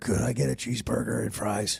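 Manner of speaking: creaky put-on grown-up voice from a child. Kid alone in a hotel room ordering room service: faking a grown-up voice. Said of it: "a voice that can only be described as you're alone in the hotel room and calling to sound like one of your parents".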